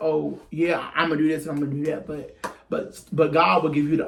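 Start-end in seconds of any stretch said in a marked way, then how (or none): none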